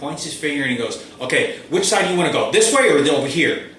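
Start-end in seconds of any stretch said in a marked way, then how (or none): 1.2-3.6 mock loud, aggressive, bossy commanding tone. Retelling a driver pointing his finger and asking: imitating an aggressive tone. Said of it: "he makes sure he says this in an aggressive way".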